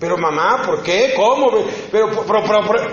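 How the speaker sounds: indignant, protesting delivery.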